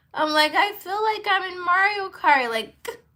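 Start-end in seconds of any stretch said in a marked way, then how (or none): 0.5-2.4 mock awestruck crying, very high and loud. Retelling own words while driving at night: retelling own crying. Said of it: "and I'm crying at the same time".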